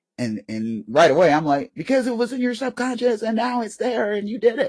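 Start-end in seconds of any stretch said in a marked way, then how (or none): 1.7-4.7 play-acted shrill, high-pitched screaming, way up high. Retelling watching a show about an ai, retelling screaming at the tv. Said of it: "I'm screaming at the TV this".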